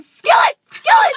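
high, loud yelling. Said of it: "I'm sitting here yelling".

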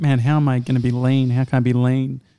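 ordinary talk, nothing marked

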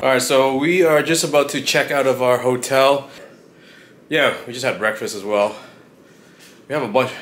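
out of breath, panting between words, winded. Checking out of a hotel after lifting suitcases, out of breath. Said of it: "I'm out of breath right now".

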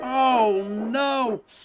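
moaned. Narrator reads a character's reaction as a flatbed comes off the track, moaning. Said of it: "moaned Thomas".

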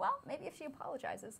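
soft, sing-song sarcastic tone.

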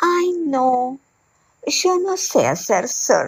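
shy, hesitant, high, slow little reply. A narrator reads the heron's answer to the pelican's invitation: timid reply. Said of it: "La garza, con sus zapatitos amarillos, / Desde hoy somos marido y mujer, / contestó tímidamente la garza".

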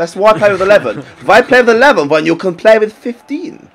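best-effort German accent. Joking that the other side has more players, a speaker puts on a mock German accent. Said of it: "that was my best German".

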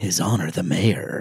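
spooky Halloween movie-trailer announcer voice. A podcast host reads out names like a Halloween trailer, Don LaFontaine trailer voice. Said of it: "I'm saying it like it's a trailer for a Halloween".

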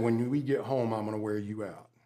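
very low, hushed, stern voice. Retelling what their dad said while leading them to the car: low voice. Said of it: "in that low voice said".

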